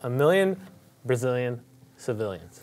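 very slow, careful delivery with every syllable placed deliberately. Interviewer naming the guest's latest album title, said very slowly. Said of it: "I have to say this very slowly".

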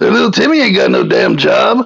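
swooping, animated, exaggerated character voice. Someone asks you to say the line about little Timmy again, in Rebel's voice. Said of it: "Say it in Rebel's voice for me".

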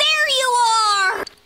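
shouting. Arriving and finding the others after searching for them: shouting. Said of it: "Yell it louder".

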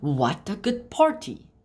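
ordinary delivery, nothing marked

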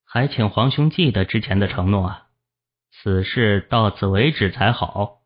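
ordinary delivery

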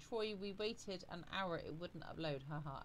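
usual speaking voice

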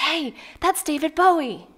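whispering. In a theater, retelling a friend's whispered remark: whispering.

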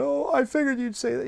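cried out at very high pitch. Retelling her reply after the speaker refused her hug, retelling her crying out. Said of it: "she cried".

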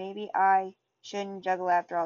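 ordinary delivery, nothing marked

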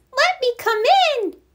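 put-on very high, teeny tiny mouse squeak voice. The little mouse asks the sleeping animals to let it in, teeny tiny mouse voice. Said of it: "said the little mouse in a teeny tiny voice".

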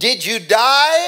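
loud yelling called out at full stretch. Retelling a question someone called out: retelling a yell. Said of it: "yelled out".

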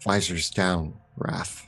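quiet whisper in a character voice. Leaning over to a companion while walking, whispering in character. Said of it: "I lean over to Wrath and I just kind of whisper".

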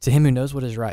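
plain

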